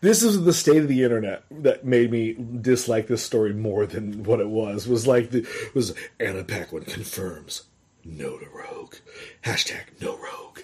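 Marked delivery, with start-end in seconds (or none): 6.2-10.6 breathy, hushed put-on movie-trailer announcer voice. Reading out an internet headline to the other speaker, in a movie trailer announcer voice. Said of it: "You're the one putting that voice on it".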